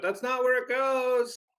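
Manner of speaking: shrill, very high gnome holler. A player puts the coin in the statue and the gnome objects; shouting gnome. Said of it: "The gnome shouts out".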